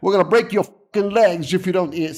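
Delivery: menacing, tough, mobster-style voice. Discussing american movies, demonstrating how their characters talk in a tough guy voice. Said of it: "you want to do a tough guy voice".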